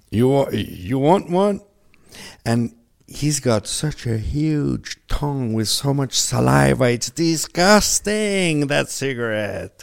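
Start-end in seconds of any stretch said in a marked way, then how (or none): 0.1-1.6 put-on casual, relaxed voice with an Australian accent. Retelling a greeting from a big bearded friend in North Australia: Australian accent impression. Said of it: "That's a good accent".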